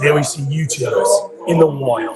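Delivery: nature-film documentary narrator voiceover delivery. Filming people trying on shoes, narrating: nature documentary narrator voice. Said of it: "I'm gonna do it like a nature documentary".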